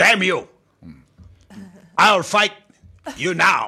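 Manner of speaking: high, bad old kung fu movie dub accent. Recalling old kung fu movies, old kung fu movie dub accent. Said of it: "We love when you do accents".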